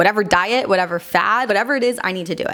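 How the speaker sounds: ordinary talk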